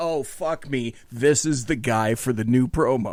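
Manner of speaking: ordinary delivery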